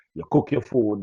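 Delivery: ordinary talk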